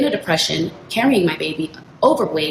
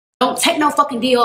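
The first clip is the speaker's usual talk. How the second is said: mock pleading yell, high pitch; 6 semitones higher than usual. Recounting what the speaker told him about his deal, retelling a yell. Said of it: "I'm yelling at him like".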